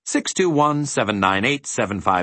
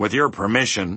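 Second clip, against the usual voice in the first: plain reading voice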